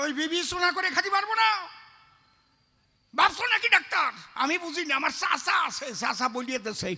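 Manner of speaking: high, loud, indignant protesting voice.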